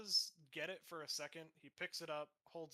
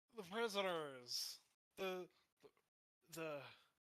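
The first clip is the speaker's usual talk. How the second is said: put-on drunken, halting voice, losing the thread; 2 semitones higher than usual. Voicing the one on the eastern side who squints at the players: drunk voice. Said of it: "These guys are sloshed".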